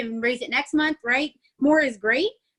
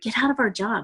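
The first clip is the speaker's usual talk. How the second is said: secretive stage half-whisper; 3 semitones lower than usual. Explaining business goals to listeners who may be at their jobs: half-whispering. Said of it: "I'm gonna whisper it".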